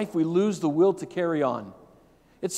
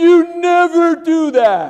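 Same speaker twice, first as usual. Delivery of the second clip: put-on angry teen girl voice, higher, louder; 10 semitones higher, 11 dB louder than usual. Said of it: "She stomps upstairs all mad".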